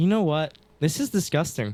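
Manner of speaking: plain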